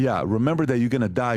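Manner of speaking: ordinary delivery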